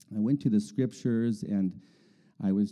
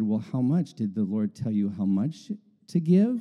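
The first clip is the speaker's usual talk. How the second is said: ordinary delivery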